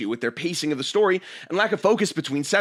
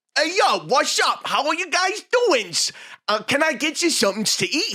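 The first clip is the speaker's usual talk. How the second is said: high, put-on New York guy accent; 12 semitones higher than usual. Retelling how a waiter at Chicago Midway came up, imitating New York accent. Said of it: "this is the most New York man to ever New York".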